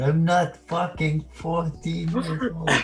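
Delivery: mock furious, exploding rage. Imitating a fourteen-year-old viewer who explodes: imitating an exploding rage. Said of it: "Zerg's gonna explode".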